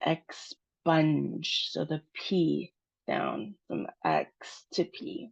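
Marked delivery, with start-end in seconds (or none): 0.1-1.7 stressed "sponge", said lower. Pronunciation lesson, saying expunge with stress on sponge. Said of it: "The stress of the word is on sponge".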